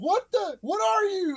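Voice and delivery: put-on scared, very high-pitched, frightened voice. Recounting being attacked in a cave, the speaker quotes his past self: retelling a scared question. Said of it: "And I got real scared".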